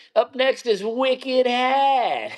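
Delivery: very high, very slow, drawn-out Maine drawl. Quoting a good dude you have known forever announcing a truck, imitating a Maine accent. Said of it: "he's got that Maine accent that I love".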